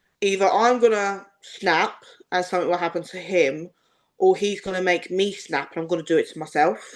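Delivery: ordinary delivery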